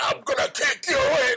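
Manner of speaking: angry, pissed-off tortoise voice. Voicing pet tortoises storming out of their hide: put-on pissed-off tortoise voice. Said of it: "all pissed off".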